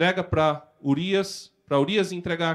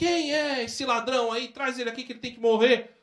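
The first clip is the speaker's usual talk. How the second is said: outraged, fast and high-pitched. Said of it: "[name] fica revoltado e fala".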